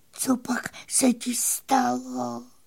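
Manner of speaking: soft, drawn-out whisper through welling tears. A little fairy finds her pony lying sick and asks him, in a tearful whisper. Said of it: "Zašeptala a spod hustých řasí vyhrkly slzy".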